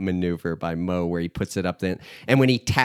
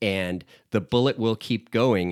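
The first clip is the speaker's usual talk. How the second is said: plain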